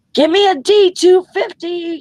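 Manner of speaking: very high-pitched, shrill yell at top of lungs. Retelling a nurse running in to a patient who couldn't be woken; imitating a nurse yelling.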